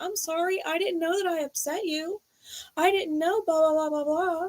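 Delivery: sweet, fake-innocent tone, pitched very high. Acting out the other person's reply: imitating someone playing innocent. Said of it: "the other person's playing innocent".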